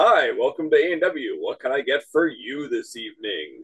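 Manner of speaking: vintage newsreel narrator delivery. Recalling a drive-through worker greeting customers, speaker imitates him in a newsreel announcer voice. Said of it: "it sounded like it was right out of a newsreel".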